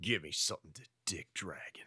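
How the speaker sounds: hushed, whispered voice. Performing the line after being asked to use the voice from the game: StarCraft game voice. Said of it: "think of it with the voice from the game".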